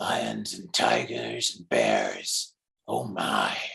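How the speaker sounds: very low, rough, slow, gritty tough-guy voice. Doing a famous movie line in a character voice: Dirty Harry voice. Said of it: "I'm going to do it in the Dirty Harry voice first".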